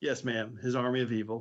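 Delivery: flat, deadpan delivery. Recounting a scene, answering a question about the armed conflict, Paris's deadpan reply. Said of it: "Paris just straight deadpan".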